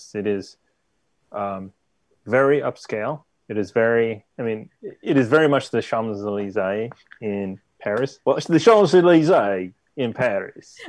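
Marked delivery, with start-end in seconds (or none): 8.4-10.8 odd Australian-sounding accent, higher and louder. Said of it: "It was kind of Australian?".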